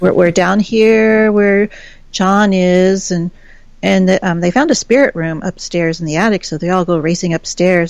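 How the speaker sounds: normal talking voice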